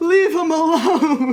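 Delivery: group yelling, high, slow and laughing.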